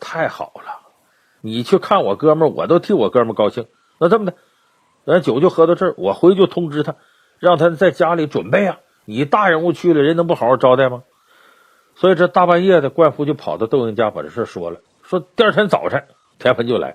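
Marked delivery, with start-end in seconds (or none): none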